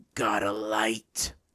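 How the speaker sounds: rough, gravelly, rasping voice. Reading a story aloud, the creature finally speaks: gravelly voice. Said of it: "as he gravels out".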